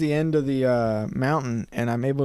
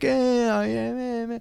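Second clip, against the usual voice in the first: very high, slow, drawn-out, dramatic put-on toddler crying; 10 semitones higher than usual. Retelling a recording of a toddler crying: imitating Seth crying. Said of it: "Hearing you cry, you're like".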